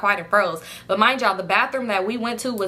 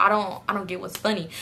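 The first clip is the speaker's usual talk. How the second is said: acted, mock-scared, nervous fearful delivery; 4 dB quieter than usual. Retelling what the girl said while the others laughed, imitating someone scared. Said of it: "she over here looking scared like".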